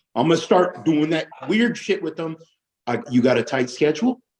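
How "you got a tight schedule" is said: pitch rising at the end on 'schedule'. Echoing a line back as a question with an upward inflection on schedule. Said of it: "Upward inflection".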